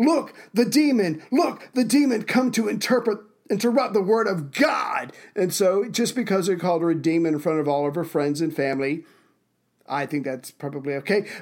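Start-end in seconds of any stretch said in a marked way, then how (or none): 0.0-5.1 mock screaming, higher pitch, slower pace. A preacher points at a woman arriving late again: retelling a preacher's scream. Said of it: "and he screams".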